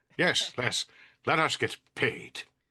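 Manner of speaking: prim, stiff voice putting on tough talk. Imagining an older professor saying a line: old professor faking a tough voice. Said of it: "the older Jones professor trying to sound like a tough".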